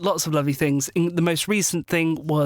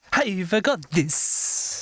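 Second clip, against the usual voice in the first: put-on Italian accent in a woman's voice; 3 semitones higher than usual. Asked to speak as a female character with an Italian accent. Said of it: "speak as a female character with an Italian accent".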